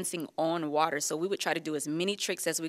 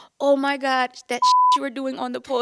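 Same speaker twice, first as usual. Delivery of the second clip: put-on Caribbean accent with pitch swinging upward; 9 semitones higher, 10 dB louder than usual. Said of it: "she came over to me in her Caribbean accent".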